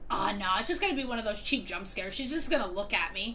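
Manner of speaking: normal talking voice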